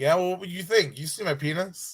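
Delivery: put-on deadpan, straightforward delivery. Retelling a scene line as Marshall: imitating Marshall's straight-faced delivery. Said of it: "such a straight face".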